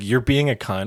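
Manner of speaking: usual speaking voice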